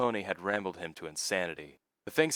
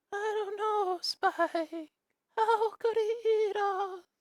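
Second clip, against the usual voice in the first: weird put-on voice, very high and slow. Reading a story chapter aloud, one character answers another in a weird character voice. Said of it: "my weird ass voices".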